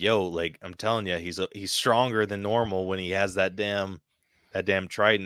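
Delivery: ordinary delivery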